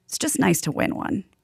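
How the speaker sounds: soft, breathy, near-whispered, choked-up voice. Retelling a moment from the series: imitating Kevin choked up. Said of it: "he's getting a little choked up, and he goes".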